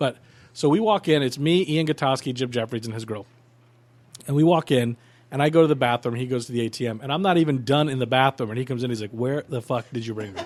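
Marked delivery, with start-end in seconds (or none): 9.1-10.4 properly upset, agitated tone. Retelling a friend's reaction to a bad strip club: imitating Jim Jeffries upset. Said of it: "he was so upset".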